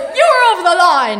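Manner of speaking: play-acted very high, shrieking shout. Retelling the woman's yelled argument: imitating a woman yelling. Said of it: "And she goes".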